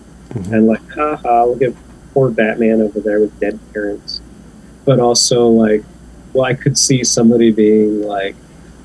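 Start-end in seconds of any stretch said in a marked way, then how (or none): none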